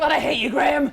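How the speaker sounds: high, choked-up voice, welling up with emotion. Recalling a dinner full of love for someone: getting emotional. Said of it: "I'm gonna get emotional".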